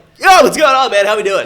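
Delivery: put-on loud joking voice. Retelling own greeting when calling a friend: retelling own loud greeting. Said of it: "I'm being loud".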